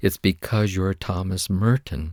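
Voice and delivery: quavering, unsteady, shaking, trembling voice. Retelling answering a man who slammed his hand on the desk: retelling own shaking voice. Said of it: "with my voice shaking".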